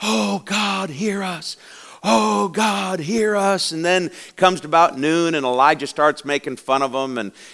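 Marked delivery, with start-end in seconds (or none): 0.0-3.7 put-on very slow, high, stretched-out scream. Retelling the prophets of Baal calling on their god, acting out screaming. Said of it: "they're screaming at Baal".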